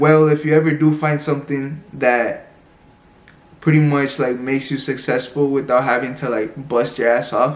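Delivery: plain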